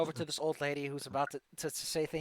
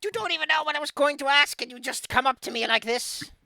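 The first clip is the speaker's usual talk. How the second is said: put-on shrill, booming, loud cackling old hag voice; 11 semitones higher, 10 dB louder than usual. An old lady by the lake scolds a party member, in an old hag voice. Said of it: "you hear a cackling voice coming from the edge of the water. / a nice old lady with a crooked nose, green skin. Not exactly the pristine beauty you might expect, but man, that hair goes to her feet. /".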